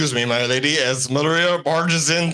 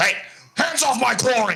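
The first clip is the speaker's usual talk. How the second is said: very high-pitched, bellowing, roaring voice; 10 semitones higher than usual. Playing a character in a tabletop game, roaring. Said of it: "He roars".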